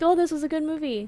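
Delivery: mocking sarcastic tone. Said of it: "Even you put the sarcastic tone on your voice".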